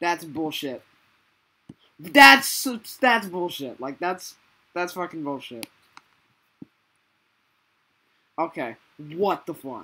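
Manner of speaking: angry, swearing outburst. Reacting to a golf ball getting stuck in a game: angry. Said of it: "Are you mad?".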